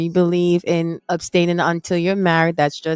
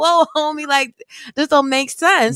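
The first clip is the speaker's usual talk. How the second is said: lively put-on voice, higher pitch; 9 semitones higher than usual. Retelling the sellers' reaction to a buyer refusing proof of funds: animated imitation of sellers. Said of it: "I'm a little bit animated".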